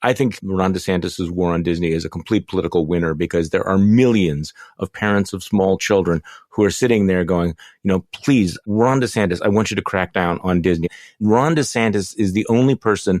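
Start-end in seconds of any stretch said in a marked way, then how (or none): none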